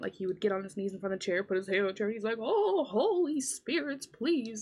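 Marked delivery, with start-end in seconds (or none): 2.4-4.6 very slow, high, drawn-out calling. Retelling how a friend knelt before a chair, imitating a friend's mocking seance plea. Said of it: "a mocking seance".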